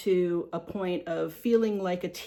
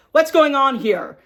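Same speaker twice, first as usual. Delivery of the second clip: very loud, firm, direct call-out; 6 semitones higher, 11 dB louder than usual. Advising how to step in against an attacker, using a firm, direct voice. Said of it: "have like a firm, direct voice".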